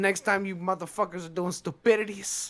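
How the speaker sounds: put-on thick Spanish accent, laid on, angry scolding tone. Speaker retells a pissed-off woman scolding him and a friend, imitating her very thick accent. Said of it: "she's got like a, a very thick accent".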